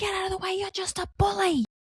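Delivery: put-on yelling. Retelling how an older woman at the playground yelled at a boy: imitating someone yelling. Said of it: "she yells at this boy".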